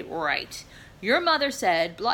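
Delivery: big, hefty, strong dad voice. Retelling the father standing up to repeat the mother's order, in a big strong dad voice. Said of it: "in this big old strong dad voice".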